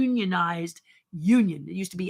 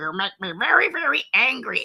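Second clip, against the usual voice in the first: goofy cartoon voice with swooping pitch; 3 semitones higher than usual. Showing examples of animation voices: silly animation voice. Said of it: "animation voices and silly voices like this".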